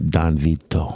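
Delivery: put-on mob movie Italian accent. Answering a request to say some Italian: mob movie Italian accent. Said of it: "like the Italian from the mob movies".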